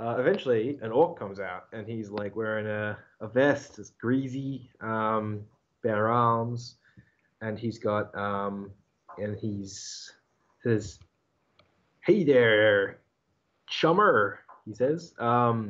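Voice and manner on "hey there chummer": awkward, clumsy slang delivery. Narrator voicing an orc who comes out to greet, awkwardly using slang. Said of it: "kind of like awkwardly using the slang".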